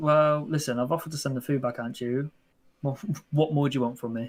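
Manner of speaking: plain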